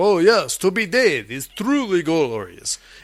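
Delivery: posh foreign-sounding voice. Retelling a movie scene where Dracula answers Lucy's poem: imitating Count Dracula. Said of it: "and he's like".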